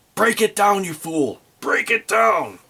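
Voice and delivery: screamed at full tilt, high pitched. Narrating a tabletop game, a character screams at a cultist: screaming orders. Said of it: "And he screams at him".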